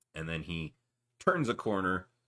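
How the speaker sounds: ordinary delivery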